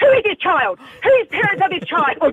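mock yelling at top of lungs, very high. Parent recounts marching a little kid out in front of others: retelling their own shout. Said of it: "at the top of my voice".

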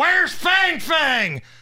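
high, slow, jeering heckling shout.

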